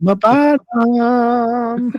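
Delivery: shrill, very loud, very high, drawn-out squeal on "bottom". Retelling what a man told him outside the restaurant, in a high-pitched voice. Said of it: "in a high pitched voice".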